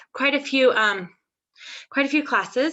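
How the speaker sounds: breathless, winded, short of air. Sharing a monthly highlight in a meeting, out of breath. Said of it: "sorry, I'm out of breath".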